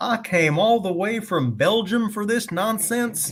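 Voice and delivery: put-on heavy Southern accent, pitched very high. Retelling a doctor's line from a story, thick southern accent.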